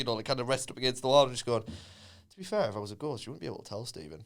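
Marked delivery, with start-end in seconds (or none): 1.6-4.2 mock casual, low, offhand, nonchalant delivery. Retelling a spooky remark to a friend in the dark: retelling a nonchalant remark. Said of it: "he just nonchalantly said that".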